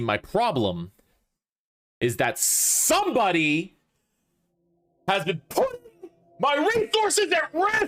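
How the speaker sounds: angry, stern voice, in character. Voicing a character whose body language turns really stern: angry stern voice. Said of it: "You sound angry".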